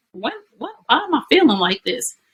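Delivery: high-pitched, startled, puzzled alarm.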